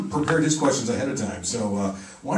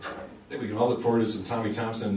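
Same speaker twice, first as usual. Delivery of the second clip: ordinary talk, nothing marked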